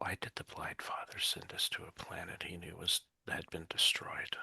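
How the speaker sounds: quiet whisper. Falling back beside a companion while walking, whispering a question to him. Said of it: "lean over and whisper to him".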